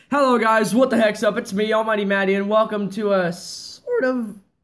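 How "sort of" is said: voice breaks and cracks on the words. Opening a drawing video and welcoming viewers: voice cracking. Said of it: "My voice cracked".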